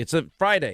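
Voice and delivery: ordinary talk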